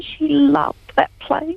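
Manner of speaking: moved, feeling welling up. A speaker talks about her mum being part of a play, emotional. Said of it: "Sorry, I get emotional".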